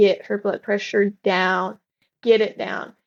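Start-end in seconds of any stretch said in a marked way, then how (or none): none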